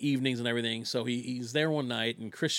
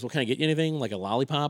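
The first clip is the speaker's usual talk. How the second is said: plain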